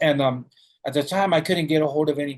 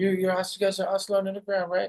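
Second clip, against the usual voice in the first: put-on very friendly tone, higher and quieter; 5 semitones higher, 4 dB quieter than usual. Retelling how a cop greeted him at the door: imitating a very friendly cop. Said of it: "in the very friendly, most friendly way possible".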